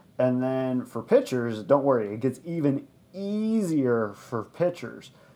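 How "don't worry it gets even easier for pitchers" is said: dry tone dripping with sarcasm. Explaining a confusing baseball stat to another speaker: sarcastic. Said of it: "Sense the sarcasm".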